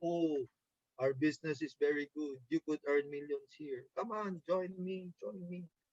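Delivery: very hushed, glum, gloomy, low, unenthusiastic voice. Showing a team how not to invite people to the business: gloomy, unexcited voice. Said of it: "if you have a long face and you talk like".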